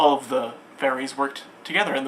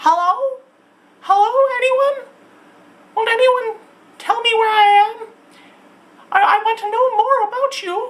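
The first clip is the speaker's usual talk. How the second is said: tiny, very high, small piping raised voice; 6 dB louder than usual. Reading a story, she speaks up to the town's people in her tiny little voice. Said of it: "speak up in her tiny little voice".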